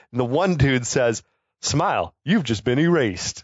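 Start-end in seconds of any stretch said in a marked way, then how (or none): none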